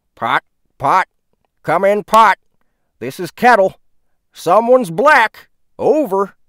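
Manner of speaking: walkie-talkie radio voice, very high and very loud. Narrating a man mocking another during their banter, like speaking through a radio. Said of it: "mimicked like he was speaking through a radio".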